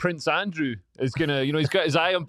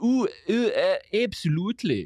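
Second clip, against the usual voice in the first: slow, drawn-out, put-on English accent; 4 semitones higher than usual. Describing people in Edinburgh who sound English: imitating an English accent. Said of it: "they totally sound English. They're like".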